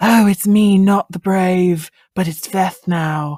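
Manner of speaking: loud, hammed, put-on British accent. Describing how their top casting choice would play the transformation scene, in a fake British accent. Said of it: "put on that fake British accent".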